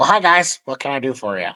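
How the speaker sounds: tiny gnome character voice. Telling the group that a small gnome greets them in town: Nomio gnome voice. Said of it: "a small gnome named Nomio, and he goes".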